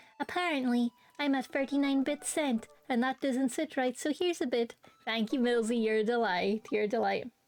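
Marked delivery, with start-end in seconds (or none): 0.2-4.8 synthesized text-to-speech reading voice. Reading out a viewer's message, doing a best text-to-speech voice. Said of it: "let me do my best T T S, um, impression".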